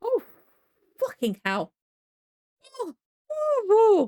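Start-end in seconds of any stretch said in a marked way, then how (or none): 0.0-1.7 very high, swooping, drawn-out startled cry. Reacting as something suddenly moves: startled exclamation. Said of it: "that made me jump".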